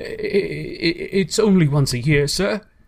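pleading. Bob, behind his time, pleads with Scrooge: pleading. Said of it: "pleaded Bob".

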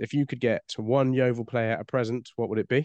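plain

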